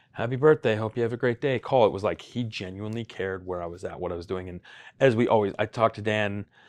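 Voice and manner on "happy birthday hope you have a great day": mock mechanical, canned robotic voice, pitched up. Imitating a birthday phone call: imitating a robotic greeting. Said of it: "it didn't seem like a robotic".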